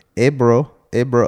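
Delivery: put-on Mexican accent. Retelling going to someone's door at night, imitating a Mexican accent. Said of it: "How do I gotta do a Mexican?".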